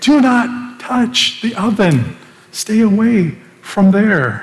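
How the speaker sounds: loud, high-pitched yell. Acting out a woman warning someone away from a hot oven, loud warning shout. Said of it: "Her voice is going to be loud, maybe even a scream".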